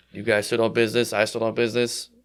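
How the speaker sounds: ordinary talk, nothing marked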